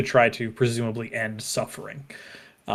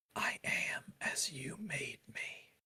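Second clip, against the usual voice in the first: ghostly whisper, very hushed, slow and faint; 3 semitones higher, 18 dB quieter than usual. Voicing a mysterious voice heard on the wind: whispering voice. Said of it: "a voice in your ear whispered".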